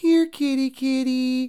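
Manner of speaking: gentle, high, persuasive coaxing voice. Illustrating a Japanese idiom by calling a cat: soft coaxing cat-petting voice. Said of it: "speaking with a cat petting voice, or expressing a gentle persuasive voice, like".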